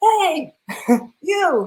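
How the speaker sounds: loud, high-pitched shout. Telling a story, the speaker acts out a man's shout above the traffic at a woman. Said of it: "he shouts above the traffic at her".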